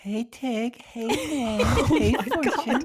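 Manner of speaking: put-on high baby talk voice. Asked by co-hosts to do his baby voice, greeting them in a baby voice. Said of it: "Can we hear your baby voice?".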